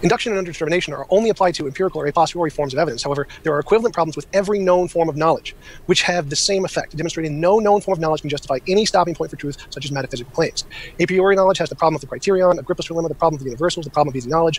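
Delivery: dense, nonstop, jargon-heavy academic lecture delivery. Laying out arguments on limits of knowledge, talking very fast. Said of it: "you guys talk so fast".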